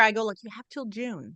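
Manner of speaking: whispering. Retelling what they have been telling him all year, whispering. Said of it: "here I'm whispering again".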